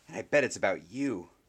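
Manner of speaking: hissed, hissing voice. Someone at the table speaks to the person everyone turned toward, hissing. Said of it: "someone at the table hissed".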